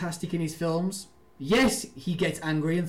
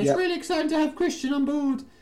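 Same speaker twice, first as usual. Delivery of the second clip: lousy put-on old lady voice, pitched very high; 11 semitones higher than usual. Quoting an actress from an interview: bad Mrs. Doubtfire old lady accent. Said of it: "that really bad Missus Doubtfire kind of old lady accent".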